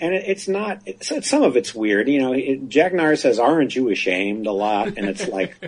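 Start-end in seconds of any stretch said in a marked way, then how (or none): none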